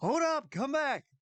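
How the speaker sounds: very high, loud yell. Voicing a companion calling the group to come back: yelling. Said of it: "you hear your companion yell".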